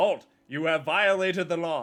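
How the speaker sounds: stiff, shrill, very loud game guard shout. Comparing someone reading a script to a bad game NPC, doing an Oblivion guard voice. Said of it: "he's an Oblivion guard".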